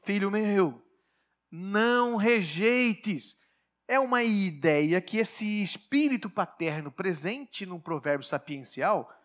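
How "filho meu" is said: earnest, imploring, slow pleading tone. Showing the tone of a fatherly proverb: pleading, appealing tone. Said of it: "O tom de apelo, porque, filho meu, o tom é esse aqui".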